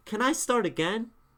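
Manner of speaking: emphatic, forceful, very loud insistence. Showing students how a poem line can sound: forceful. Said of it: "Or you can be forceful".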